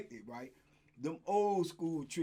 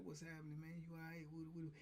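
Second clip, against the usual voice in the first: hushed, very soft, low voice; 17 dB quieter than usual. Retelling how a small fighter spoke to people, imitating someone talking low and soft. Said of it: "He talked low and soft".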